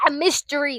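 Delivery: sudden, loud, high, excited screaming burst. Correcting a film genre label for viewers: screaming. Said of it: "I don't know why I'm screaming at you guys".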